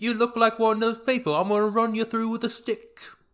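terrible put-on Cockney accent, pitched way up. Speaker mocks an imagined Disney recasting, Blade with terrible Cockney accent. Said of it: "Just doing a terrible Cockney accent the whole time".

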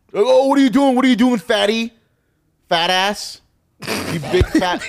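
put-on very high, loud, jeering childlike taunting. Retelling what the kids at school would say: imitating kids taunting. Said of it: "That's what they would say".

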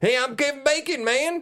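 put-on high-pitched Southern accent. Praising an actor's accent in a movie: Kevin Bacon Southern accent. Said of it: "I loved Kevin Bacon's Southern accent".

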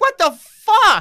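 very high, loud, shrill, furious full-blown meltdown yell. Retelling a film set delay, imitating the director Todd Phillips losing it. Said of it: "he like loses his fucking mind".

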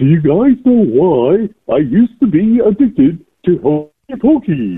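pitch goes way up high, cartoon-style. Doing a Patrick impression on request: Patrick voice. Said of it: "do the Patrick instead".

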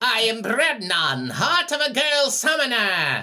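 shrill, swooping, booming cartoon villain voice. Playing the band member as a bad guy: Space Ghost villain voice. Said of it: "Sounds like a bad guy in Space Ghost".

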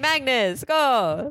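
high, cheering voice in put-on Jamaican accent. Describing fans in Norway cheering on a chess player: imitated Jamaican accent. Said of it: "Was that a Jamaican accent in Norway?".

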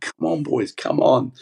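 acted-out hoarse, high, raspy, urging rallying yell. Retelling running onto the pitch to call the staff: imitating his own screaming. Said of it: "I'm screaming".

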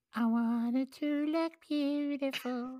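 put-on tiny child's voice, very high. Asked by others to do his little kid voice again, little kid voice. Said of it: "Do your little kid voice again".

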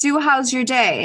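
nice, polite, refined, sophisticated British accent. Describing how others ask about your day, imitating a nice British accent. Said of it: "in a nice British accent".

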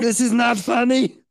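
put-on German accent. Retelling how a friend tried not to cry after a bike crash: imitating a friend in German accent. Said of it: "When did she turn German?".

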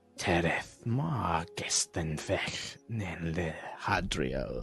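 husky, guttural, rough, throaty foreign-sounding speech. Describing a woman speaking an unknown language, the speaker uses a guttural, very husky voice. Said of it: "this kind of guttural, very husky voice".

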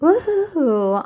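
voice cracking. Cheering for a team, voice cracking on a cheer. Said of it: "your voice cracked".

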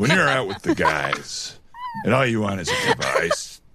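mock cool commercial voiceover voice.

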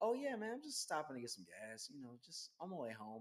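put-on polite, proper speech, soft and quick. An actor recalling putting on his acting voice, talking real proper. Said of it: "I talk real proper".

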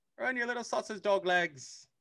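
bad, very high, squeaky cartoon Australian accent. Quoting a line Bluey says to him in a cartoon, terrible Bluey accent. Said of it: "I'm doing a terrible accent".

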